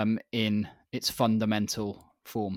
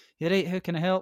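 put-on Scottish accent, chirpy and high; 8 semitones higher than usual. Retelling a phone call to cancel an order: imitating a scottish accent. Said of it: "Is it some Scottish girl?".

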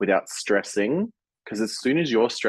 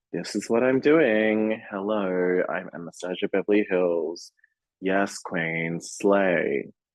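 flat, monotone delivery, dead flat, no lift. Speaker mocks a queen's manner on Drag Race, Anastasia Beverly Hilton monotone. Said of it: "she's just very monotone and stone-faced".

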